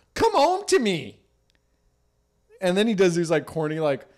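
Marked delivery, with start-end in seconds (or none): 0.2-1.2 voice breaking, very high and slow. Retelling a husband pleading with his wife to come home: imitating a voice cracking. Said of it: "His voice kinda cracks".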